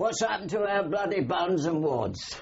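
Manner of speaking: put-on very high, shrill, loud, complaining Cockney accent. Recalling what some bright spark there asked: put-on cockney voice. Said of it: "Cockney voice".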